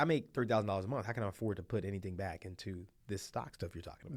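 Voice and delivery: ordinary talk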